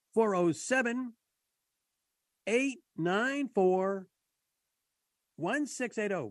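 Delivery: slow, drawn out, each digit said separately.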